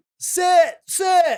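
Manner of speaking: put-on high, loud, toddler-like yelling voice.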